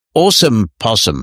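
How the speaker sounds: put-on American accent. Retelling what somebody said in passing: imitating an American accent. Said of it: "but of course with an American accent".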